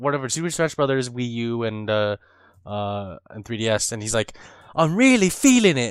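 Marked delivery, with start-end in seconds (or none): 4.8-5.9 put-on pitched-up British accent. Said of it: "With a British accent".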